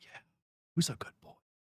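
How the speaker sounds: soft, breathy, whispered asmr-style murmur. Joking about dog ASMR, the speaker imitates people talking to a dog, in an ASMR-style whisper. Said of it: "I normally always hear it as a whisper".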